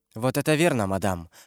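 ordinary delivery, nothing marked

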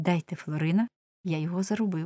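ordinary delivery

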